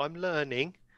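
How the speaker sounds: condescending. Speaking in character, offering another character the first turn: condescending. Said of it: "do you accept this condescending".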